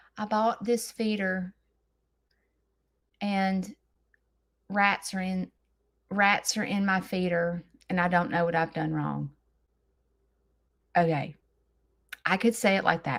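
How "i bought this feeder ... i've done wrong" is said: dull, flat delivery, lower and quieter. Showing how a story sounds told the boring way: boring, flat storytelling. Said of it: "it's so boring if I said".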